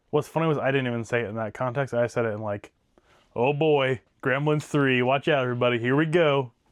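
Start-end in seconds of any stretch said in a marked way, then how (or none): 3.3-6.4 dry, sarcastic, fake mock-excited hype. Recalling how the speaker originally said it, retelling a sarcastic remark. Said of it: "Like kind of almost like in a sarcastic way".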